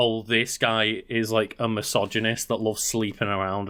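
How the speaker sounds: plain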